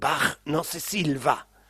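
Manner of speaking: put-on thick, heavily marked German accent. Retelling what a man in a passing car said: strong German accent. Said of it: "con un fuerte acento alemán le dice".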